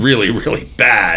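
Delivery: ordinary delivery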